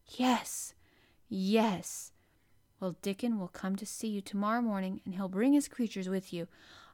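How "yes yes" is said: near-whisper, soft and low. Narrator reads Colin's reply when Mary asks if she can trust him, almost whispered. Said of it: "he almost whispered his answer".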